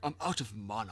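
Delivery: put-on British accent. Describing game Blood Elves to the other speaker, in a Blood Elf British accent. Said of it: "They have this British accent".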